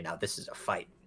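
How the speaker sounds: barely voiced, whispered mutter under the breath. Looking at the enemies around in a battle, muttering under breath. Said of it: "under my breath, I'm gonna say".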